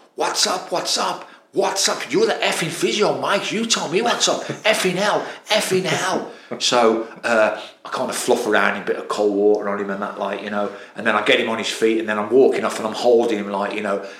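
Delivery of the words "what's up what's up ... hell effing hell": mock, very high-pitched, raging rant. Retelling how an injured player reacted to the physio: imitating a player going mad. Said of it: "he went mad".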